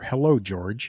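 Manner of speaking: ordinary talk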